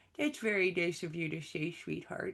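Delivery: sagging hound-dog cartoon voice. With staff visiting to say goodbye and share favorite memories, Droopy Dog voice. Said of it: "because I could do the droopy dog voice".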